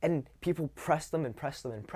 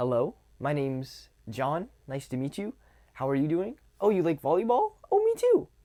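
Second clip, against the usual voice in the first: rapport-seeking upswing at the end of each phrase; 4 semitones higher, 6 dB louder than usual. Demonstrating to listeners how seeking-rapport speech sounds, with upward seeking-rapport tonality. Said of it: "Seeking rapport is when you speak like this".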